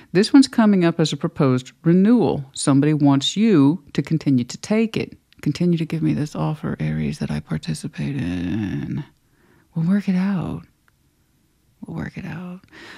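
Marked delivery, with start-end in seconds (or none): 5.4-12.6 mimicked soft, creepy tone, quieter. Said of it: "the voice is soft and it's a little creepy".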